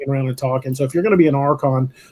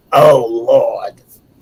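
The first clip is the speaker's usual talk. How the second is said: rough, gravelly put-on character voice; 2 semitones lower, 4 dB louder than usual. Joking about a rough voice, doing a gravelly Harvey Fierstein voice. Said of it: "kinda gravelly doing the Harvey Fierstein".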